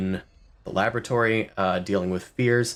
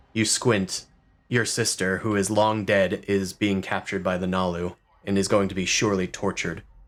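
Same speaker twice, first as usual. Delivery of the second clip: ordinary delivery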